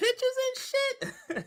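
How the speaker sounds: very high, very soft, hushed outraged squeak. Arguing about publicly available evidence, showing off a high-pitched outrage voice. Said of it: "that's my outrage voice".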